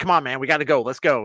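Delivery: mock-aggressive, put-on aggressive tone. Retelling to his companion how he rushed everyone at a Vegas cashier, mock-aggressive. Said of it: "you're just very aggressive".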